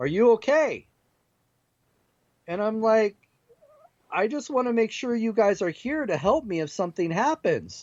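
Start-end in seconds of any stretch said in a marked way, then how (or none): 0.0-0.9 play-acted shouted call, as if from below. Recounting someone calling up from downstairs to check on them: retelling a yell from downstairs. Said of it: "I hear him yell from downstairs".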